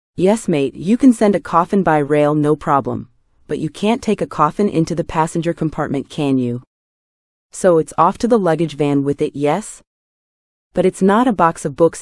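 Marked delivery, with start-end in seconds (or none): none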